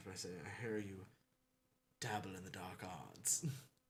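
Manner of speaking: voice dropped slightly, hushed and discreet. Playing a character in a game, speaking to Cole so others won't notice, with a slightly lowered voice. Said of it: "I kind of lower my voice a little bit".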